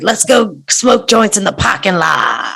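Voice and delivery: rasping voice with a creak. Retelling what a team owner said on a hot mic: imitating Jim Irsay. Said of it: "He's like".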